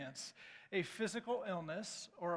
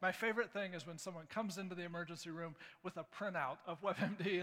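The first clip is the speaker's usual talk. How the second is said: usual speaking voice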